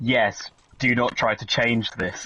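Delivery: snarky, sarcastic know-it-all tone. Imagining a search engine's answer to a question, mock sarcastic Google reply. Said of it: "Google will just be really sarcastic with me".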